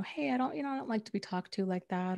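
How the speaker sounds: plain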